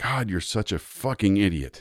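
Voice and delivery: acted angry outburst. Speaker acts out snapping at himself after misjudging a doorframe, retelling his own angry outburst. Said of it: "I got really angry".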